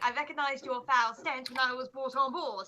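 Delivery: put-on British-tinged accent. Quoting a film line from memory: Carrie Fisher British accent. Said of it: "Carrie Fisher in her more kind of British accent saying".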